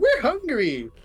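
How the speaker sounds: tiny, very high-pitched little voice. A tiny voice from a queen speaks in someone's head, in a tiny little voice. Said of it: "you get a tiny little voice in your head".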